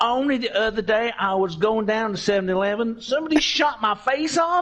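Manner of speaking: high, put-on southern American accent. Asked to do a southern accent, a speaker improvises a story in a southern accent. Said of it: "do like a southern accent".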